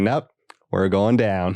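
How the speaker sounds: put-on calm pilot voice. Retelling a comedy sketch's helicopter pilot: imitating calm Jordan Peele as pilot. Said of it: "he's so calm".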